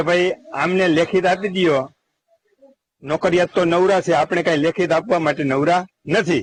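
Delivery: ordinary talk, nothing marked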